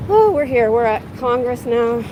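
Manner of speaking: ordinary delivery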